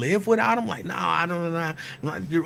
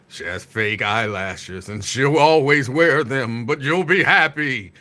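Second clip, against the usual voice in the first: put-on deep god voice, rising, a little wobbly; 6 semitones lower than usual. Retelling a voice's promise about the woman meant for the speaker: deep voice. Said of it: "he talking in a deep voice".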